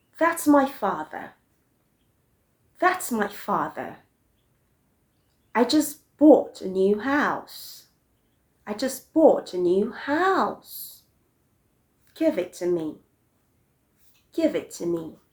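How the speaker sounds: pitch dropping at the end of each line. Teaching english intonation, giving example statements and commands with falling intonation. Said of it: "you also use a falling intonation".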